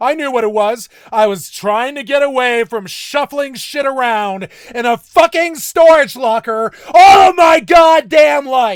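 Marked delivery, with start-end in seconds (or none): 1.1-8.8 loud, full-throated yelling. Telling about their own past, the speaker is yelling loudly. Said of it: "I'm sorry I'm yelling so loud".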